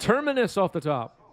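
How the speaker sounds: eager, excited voice. Reading out viewer messages, the speaker calls out: excited voice. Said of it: "That was my excited voice".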